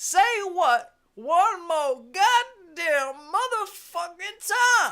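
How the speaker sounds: very loud, slow, high yelling. Praising an actor's raised-voice delivery, the speaker does a Pulp Fiction impression, raised voice. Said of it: "Pulp Fiction, great movie".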